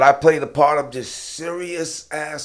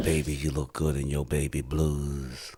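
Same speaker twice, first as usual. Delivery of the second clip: very low, sexy bass voice; 11 semitones lower, 8 dB quieter than usual. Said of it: "Or I can sound like [name]".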